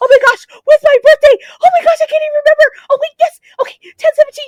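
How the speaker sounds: frantic, shrill, very high, very loud, rattled-off acted panic. Retelling trying to book an appointment while freaked out: retelling own freaked-out panic. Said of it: "That's how, like, freaked out I was".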